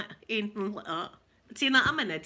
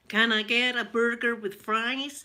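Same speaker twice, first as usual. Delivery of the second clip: poor American accent with Glaswegian still showing; 3 dB louder than usual. Showing how every accent they try stays glaswegian, attempted american accent. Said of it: "I try and do my American".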